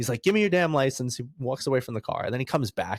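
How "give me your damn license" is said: angry, pissed-off, pitched-up voice. Retelling how a man demanded the speaker's license, imitating a pissed-off man. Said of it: "but he was pissed".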